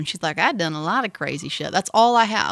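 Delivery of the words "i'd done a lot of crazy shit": put-on, terrible, poorly done Southern accent. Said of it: "she's got a bad Southern accent".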